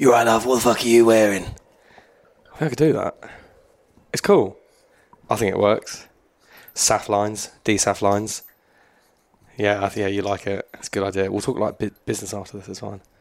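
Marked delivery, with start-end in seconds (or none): 0.0-1.4 put-on phone sex-line voice, faster. Speaker with a wrecked throat tries out a phone sex line voice. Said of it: "might start a sex line voice".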